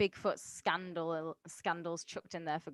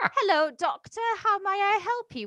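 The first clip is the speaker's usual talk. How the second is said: put-on polite baby voice, higher and louder; 14 semitones higher, 8 dB louder than usual. Acting out a newborn baby who comes out drinking tea: tea-drinking newborn baby voice. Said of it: "Gentile babies come out drinking a little cup of tea and are like".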